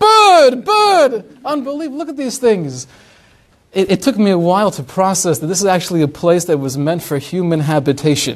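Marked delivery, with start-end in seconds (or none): 0.0-2.9 amazed, excited, high, swooping shout. Retelling seeing exotic birds after moving to Florida: retelling own excited scream. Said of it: "I'm screaming".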